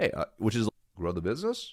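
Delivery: curious, inquisitive tone. Demonstrating mirroring back what someone just said: inquisitive tone. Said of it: "Notice my tonality shifted to more inquisitive, and then I paused".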